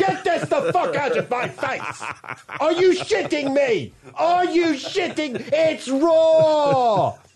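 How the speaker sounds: very high, shrill, stretched-out raw yelling. Acting out his reaction when handed undercooked risotto, with mock Gordon Ramsay yelling. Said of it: "He's like Gordon Ramsay".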